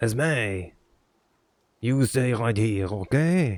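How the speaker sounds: put-on, fake French accent. Redoing the line after warming into a French accent: put-on French accent. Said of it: "get into the French accent".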